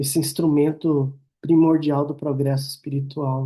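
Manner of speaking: ordinary talk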